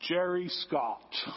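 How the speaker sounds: very low, deep, heavenly voice. Describing a voice from the sky saying a name: impersonating a voice from heaven. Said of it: "That was my impersonation of his voice".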